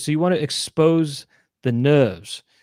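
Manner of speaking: put-on not-quite, half-done, blended partial English accent. Retelling what a demonstrator said during his demonstration: partial English accent. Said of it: "I'm saying this with not a full English accent".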